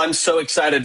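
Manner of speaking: usual speaking voice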